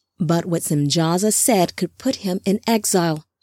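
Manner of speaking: ordinary delivery, nothing marked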